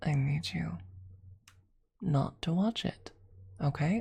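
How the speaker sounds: very soft whisper, spoken close up. Speaking straight into the viewer's ear, soft whisper. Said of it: "I'm whispering very softly into your ear".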